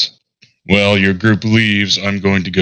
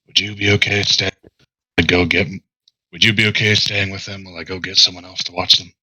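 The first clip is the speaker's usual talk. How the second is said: half-whispered, private, close to the ear, leaning in; 3 dB quieter than usual. Bending down to ask a companion to stay with the others: half-whispering. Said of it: "I'm gonna bend down and whisper to you".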